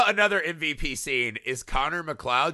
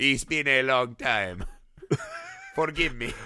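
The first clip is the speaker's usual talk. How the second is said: pitch swinging up and down across the line. Quoting a movie line about a long time: Christopher Lambert impression. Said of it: "This Lambert impression is just the best".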